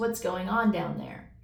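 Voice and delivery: ordinary talk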